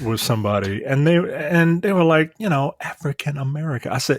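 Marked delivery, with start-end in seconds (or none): 2.8-3.9 hushed half-whisper. Retelling what someone at a table said: imitating someone half-whispering. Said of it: "why are you whispering it?".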